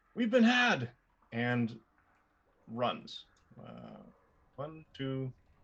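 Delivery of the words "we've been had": shouting, higher and louder. Voicing a character who is running away, yelling out: yelling. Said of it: "yell out".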